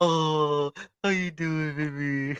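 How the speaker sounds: put-on high, cooing baby-talk voice. Retelling how people talk when they see the pup: imitating people's changed voice. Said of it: "they just change their voice".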